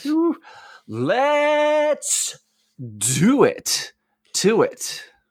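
punchy, forceful, very emphatic all-in delivery. Agreeing to start recording together: very emphatic. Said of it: "that was very emphatic".

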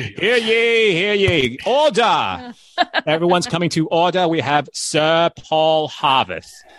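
very slow, drawn-out New England accent. Announcing the next guest like a court herald: new england accent. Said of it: "I sounded so, like, New England".

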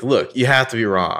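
condescending voice. Retelling Hannah's line to the lab worker, imitating Hannah condescendingly. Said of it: "I love how utterly condescending she is".

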